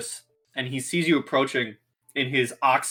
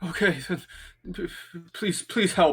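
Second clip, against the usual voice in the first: panicked heavy breathing, higher; 5 semitones higher than usual. Game master voicing a cornered, hurt man to the players: panicked, breathing heavily. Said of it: "breathing very heavily, panicking".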